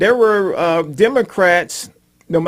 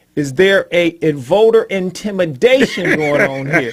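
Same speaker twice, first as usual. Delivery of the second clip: ordinary talk, nothing marked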